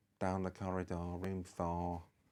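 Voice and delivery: put-on bored, jaded, unbothered Mancunian accent. Speaker recalling the woman behind the desk giving directions, imitating a jaded, unbothered Manc accent. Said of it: "in this really jaded, unbothered mm. Manc accent".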